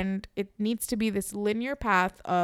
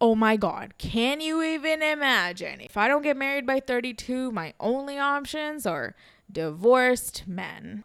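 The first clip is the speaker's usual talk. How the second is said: mock heavy, plain sarcasm all the way through; 3 semitones higher than usual. Speaking about her own prospects of settling down, sarcastic. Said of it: "Also note the sarcasm here".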